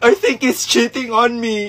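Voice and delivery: tearful, speaking through crying. Asked by a friend why she is crying, she answers, crying while talking. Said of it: "bakit ka umiiyak?".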